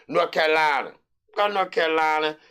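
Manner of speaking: put-on country accent with twang. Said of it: "put my country voice on".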